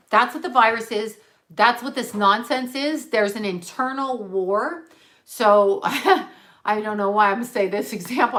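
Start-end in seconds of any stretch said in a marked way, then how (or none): 5.2-8.3 slow, louder, laughing through the words. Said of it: "I'm sorry for laughing".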